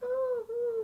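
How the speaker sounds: put-on high-pitched crying baby coos. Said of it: "like, baby noises".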